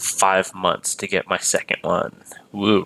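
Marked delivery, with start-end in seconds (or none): none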